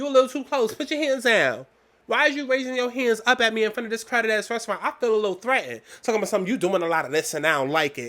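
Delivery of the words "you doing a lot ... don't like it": play-acted, dripping with sass. Mocking what the manager said in a restaurant: imitating Philip's sassy tone. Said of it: "most sassy".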